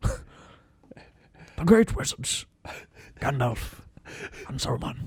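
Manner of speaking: whispered, hushed wildlife nature-documentary narrator voice. Present the great wizards in their natural habitat, in a nature documentary narrator voice. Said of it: "You do his voice so well".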